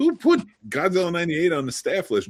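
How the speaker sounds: put-on joking, teasing tone, high and sing-song. Retelling a remark made to a young staff member walking past, re-enacting a joking tone.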